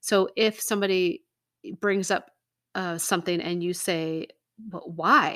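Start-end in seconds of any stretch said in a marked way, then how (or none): 4.6-5.4 dismissive "why" with attitude. Demonstrating the rhetorical way of asking when somebody brings something up, dismissive attitude. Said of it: "kind of has that attitude with it".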